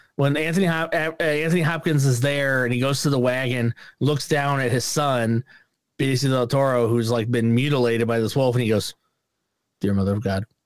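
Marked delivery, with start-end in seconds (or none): 9.8-10.5 flat, low deadpan delivery. Imitating an actor's line from a film: flat Anthony Hopkins delivery. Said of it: "he just delivers it just like that".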